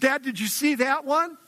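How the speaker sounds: put-on high-pitched, proud, boastful boyish bragging.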